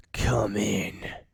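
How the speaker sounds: harsh, raspy metallic voice. From behind the throne room door, a voice answers the guard's knock, raspy and metallic. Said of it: "a raspy, metallic voice replies".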